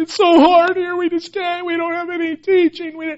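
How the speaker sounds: crying, tearful, very high-pitched pleading voice. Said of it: "He's crying".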